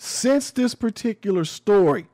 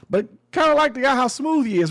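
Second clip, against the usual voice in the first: high-pitched, fast, sarcastic mock-praising tone. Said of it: "and I'm being sarcastic".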